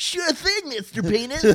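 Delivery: put-on voice, very high-pitched and loud. Joking about a man who put googly eyes on himself, doing a Pee-wee Herman impression. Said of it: "That was a good Peewee impression".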